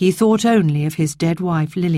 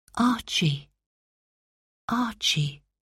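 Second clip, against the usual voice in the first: sweet, gentle, soft, high calling voice; 5 semitones higher, 8 dB quieter than usual. Narrator reading how a voice calls a sleeping man in his dream: sweet, soft calling voice. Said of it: "a sweet, soft voice was calling him".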